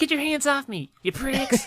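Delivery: put-on scrappy, very high, snarky teenage voice. Imitating a movie's teenage boy character: imitating a snarky, scruffy teenage voice. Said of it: "That snarky, scruffy voice".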